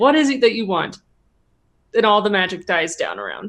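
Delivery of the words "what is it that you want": ordinary talk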